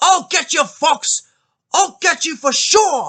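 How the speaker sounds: put-on very high, loud, angry stock Cockney accent. Quoting the angry dog catcher who threatens Fox: imitating an angry stereotypical Cockney accent. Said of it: "angry dog catcher with a stereotypical Cockney accent".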